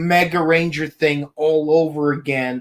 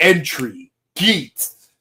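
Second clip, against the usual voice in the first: put-on, swooping American game-show announcer voice. Imitating how the show's announcer calls the name: imitating announcer's American accent. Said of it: "even the announcer voice, which uses an American accent".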